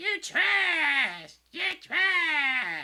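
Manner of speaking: very high, shrill, very loud voice, trash stretched out. Recalling another guy whose name he forgot, imitating his high-pitched voice. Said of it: "he had a high pitched voice".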